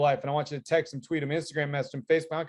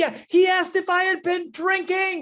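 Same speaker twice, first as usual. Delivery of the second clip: mock shrill, very loud, high, drawn-out scream; 5 dB louder than usual. Retelling an audience member calling out from the back of the auditorium: imitating someone screaming. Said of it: "She screams from the back of this auditorium".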